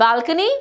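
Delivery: balcony said with climbing, rising pitch. Reading a story aloud, a character asks back: rising inflection. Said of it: "with a rising inflection".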